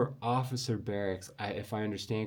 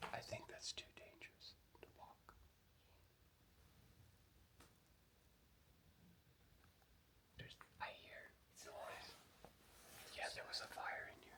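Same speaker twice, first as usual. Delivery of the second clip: hushed whisper. Exploring a place where there was a fire, hearing noise; whispering. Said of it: "I'm whispering because I hear something".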